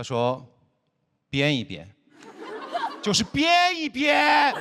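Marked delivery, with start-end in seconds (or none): 3.0-4.5 put-on impatient voice, very high, very slow, loud. Quoting his father's answer to a cooking question, imitating a louder repeat. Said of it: "用更大的音量来重复原先的答案".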